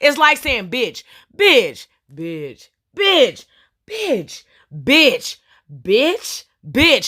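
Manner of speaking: new expression and tone on each repeated word. Speaker shows the audience how tone changes a word, changing expression each repetition. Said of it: "every single expression change in how I said that".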